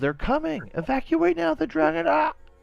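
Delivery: shouting. Voicing a rider warning the village: yelling in character. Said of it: "she yells".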